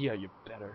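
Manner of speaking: quite quiet, soft, held-back delivery. Showing how a character at the door says his line: said quietly. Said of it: "he'd say it quite quietly".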